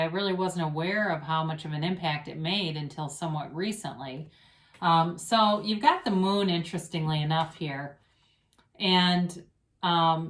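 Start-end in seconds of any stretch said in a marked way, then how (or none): none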